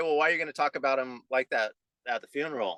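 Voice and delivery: ordinary talk, nothing marked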